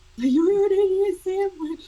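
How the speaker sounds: high, sarcastic jab. Imagining a sat-nav telling him how to drive, as a sarcastic Gordon Ramsay impression. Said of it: "like Gordon Ramsay telling me how to drive".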